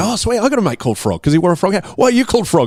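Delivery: high, fast, excited, chirpy chatter.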